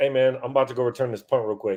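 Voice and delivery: normal talking voice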